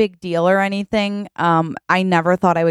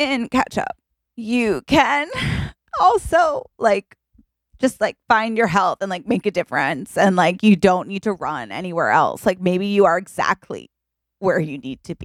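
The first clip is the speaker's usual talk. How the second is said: choked-up, emotional voice. Telling a date that tomatoes can heal you, getting emotional. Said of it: "sorry, I get emotional".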